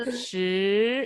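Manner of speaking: 十 said with rising second tone. Mandarin tone practice, the word modeled: rising second tone on 十. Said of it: "You raise your head when you pronounce second tone".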